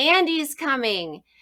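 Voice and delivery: loud, high-pitched yell. Telling how the speaker yelled a signal to working adults, retelling a yell. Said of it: "I yelled".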